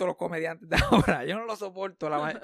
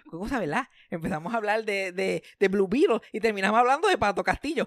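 small, little comic character voice; 2 semitones higher than usual. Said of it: "con esa vocecita de Culebro Mendoza".

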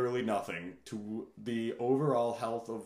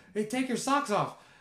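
put-on very high, shrill shouting; 11 semitones higher, 4 dB louder than usual. Retelling yelling at someone at a campsite, retelling a yell. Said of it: "I'm yelling at someone, I go".

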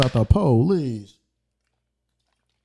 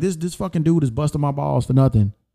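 ordinary talk, nothing marked

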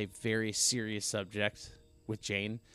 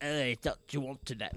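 silly, goofy cartoonish villain voice; 3 semitones higher than usual. Retelling a villain's scene with the kids: imitating a goofy cartoonish villain. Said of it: "he just turned into, like, a cartoon".

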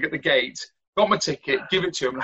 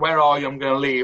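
usual speaking voice

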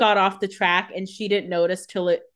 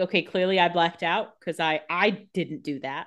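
usual speaking voice

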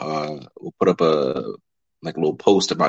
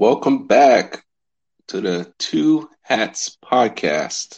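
slow, careful, deliberately unhurried, pitched-up voice; 6 semitones higher than usual. Podcast host opening the episode, saying it slowly. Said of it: "Had to say it slow".

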